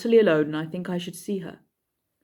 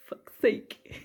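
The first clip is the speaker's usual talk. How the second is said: put-on exasperated dwarf voice, higher and quieter; 4 semitones higher, 5 dB quieter than usual. Retelling Thorin's reaction to his nephews: exasperated Thorin voice. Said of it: "Thorin's just so done with his nephews".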